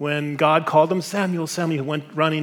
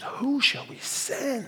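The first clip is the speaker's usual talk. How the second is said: voice like a vast, massive choir; 9 semitones higher, 7 dB quieter than usual. Voicing the seraphim's call in Isaiah six: like a huge choir. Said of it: "Like this choir, magnified by a billion times".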